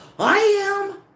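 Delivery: very high, loud shout that fills the space. Retelling confronting a politician in church: imitating herself yelling. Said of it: "And I yell".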